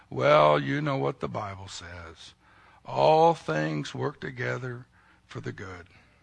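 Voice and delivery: soft, very sad, melancholy tone. Imitating someone consoling a person going through a difficult time, mock-sad melancholy tone. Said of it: "with this real sad, melancholy attitude, sounds something like this".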